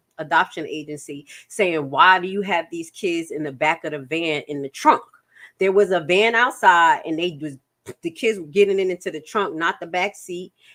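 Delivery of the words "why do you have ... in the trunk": plain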